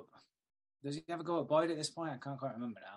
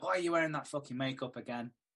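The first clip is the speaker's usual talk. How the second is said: ordinary talk, nothing marked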